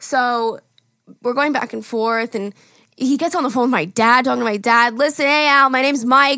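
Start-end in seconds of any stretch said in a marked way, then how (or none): 4.9-6.4 put-on Long Island accent, higher. Retelling a man talking on the phone: imitating a Long Island accent. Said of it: "the most Long Island guy ever".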